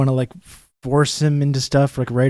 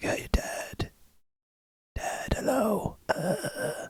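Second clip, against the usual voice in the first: voiceless whisper, very quiet and slow; 8 semitones higher, 14 dB quieter than usual. A father retelling how he was greeted, imitating someone with no voice. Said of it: "He has like no voice at all".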